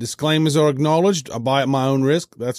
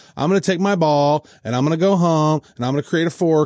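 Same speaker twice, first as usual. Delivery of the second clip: normal talking voice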